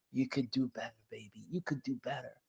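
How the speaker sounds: soft, encouraging, barely audible half-whisper. Retelling how a neighbor quietly corrected a business: imitating a neighbor half-whispering. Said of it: "she would whisper".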